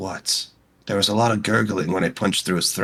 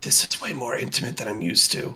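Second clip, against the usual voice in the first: close whisper right at the ear; 4 semitones higher, 4 dB quieter than usual. Playing a character in a tabletop game, whisper into Kothar's ear. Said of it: "He just whispers into Kothar's ear".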